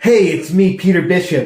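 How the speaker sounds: every word dragged out very slowly. Answering a request for an actor impression: Joshua Jackson impression. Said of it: "Do you have a Joshua Jackson impression?".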